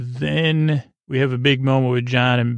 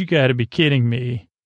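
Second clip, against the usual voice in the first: normal talking voice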